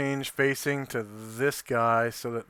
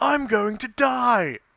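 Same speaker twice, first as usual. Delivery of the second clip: fake English accent, very high, loud, slow; 12 semitones higher, 9 dB louder than usual. Playing a character who is losing a fight: put-on English accent. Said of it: "I'm supposed to talk with an English accent".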